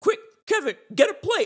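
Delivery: very high, loud, rushed put-on gagging and retching. Retelling a scene where a bully ate his brother's pizza, imitating Buzz's fake retching. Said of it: "Like trying to barf it all up".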